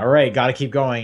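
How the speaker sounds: ordinary talk, nothing marked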